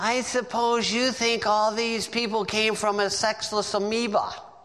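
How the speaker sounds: put-on sarcastic tone. Retelling how they answered a man the same way he spoke, retelling a mocking comeback. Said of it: "come back to him the same way".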